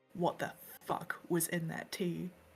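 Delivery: spoken through gritted, clenched teeth. Storyteller voicing a woman speaking to a bear, through gritted teeth. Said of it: "through gritted teeth".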